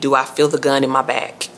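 plain

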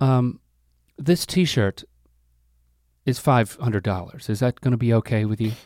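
gentle, patronizing voice.

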